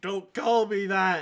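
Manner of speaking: yelled, protesting, sleep-talking voice. Teasing a friend about yelling in her sleep: imitating someone yelling. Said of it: "you're quite literally yelling in your sleep".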